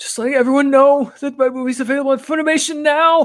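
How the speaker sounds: very high, emo anime hero dub-style voice. Reading a donation message aloud, imitating the English dub: dubbed Tanjiro voice. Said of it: "it's very kind of like".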